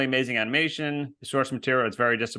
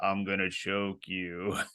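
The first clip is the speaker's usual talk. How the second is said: put-on laziest voice, low and soft; 5 semitones lower, 7 dB quieter than usual. Retelling what a man said while posing for a photo with him and his brother, imitating a lazy voice. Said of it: "in like the most lazy voice".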